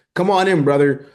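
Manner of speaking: loud, booming, pumped-up showroom salesman voice. Critiquing a sales pitch as sounding fake, imitating an Andy Elliott-style salesman voice. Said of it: "you're the sales guy who's like".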